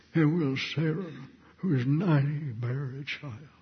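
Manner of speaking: soft, quivering, doubtful voice. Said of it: "Probably quivered for emphasis".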